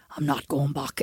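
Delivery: low, quiet, restrained, film-style put-on Irish accent. Recalling The Devil's Own for someone who may not have seen it, imitate a film character's accent. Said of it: "Oh well that's his accent anyway".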